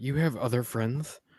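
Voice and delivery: quiet, hushed whispering. A character quietly asks Winter a question: whispering. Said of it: "I'll just whisper to Winter".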